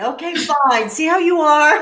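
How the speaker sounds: choked up, holding back tears. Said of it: "Now you've got me going".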